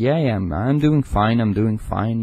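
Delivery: play-acted lacklustre tone, no excitement. Retelling how he answered on the phone: imitating an unenthusiastic reply. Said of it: "he wasn't enthusiastic about it".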